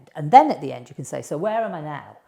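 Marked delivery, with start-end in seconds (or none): none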